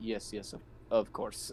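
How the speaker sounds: whispered, half-hearted and insincere. Answering a possibly sarcastic character to get out of the conversation: insincere agreement. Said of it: "not really meaning it".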